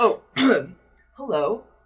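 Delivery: cracking, register-jumping voice. Voicing Gabriel as he meets Josephine, voice cracking between registers. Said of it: "he's like jumping registers as he's talking".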